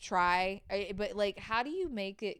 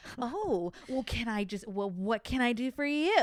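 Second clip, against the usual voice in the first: play-acted, overly sweet, sugary fake-polite tone; 2 semitones higher than usual. Retelling a customer phone call, imitating own overly sweet tone. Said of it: "I was being overly sweet".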